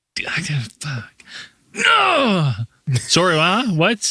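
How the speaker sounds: spaced-out, spacey rambling, slow and drawn-out. Doing an impression of Andrew two months from now: Andrew impression. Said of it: "let me do my impression of Andrew in two months".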